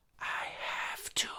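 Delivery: put-on eerie, creepy little toddler whisper. Speaker retelling what a toddler whispered back after being told off; imitating a whisper. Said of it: "she whispers at me".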